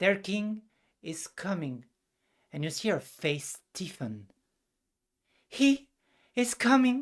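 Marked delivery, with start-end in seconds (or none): 5.5-7.0 very high, shaking, trembling cry. Narrator voices her line as her body starts shaking; shaking cry. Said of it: "Her body starts shaking".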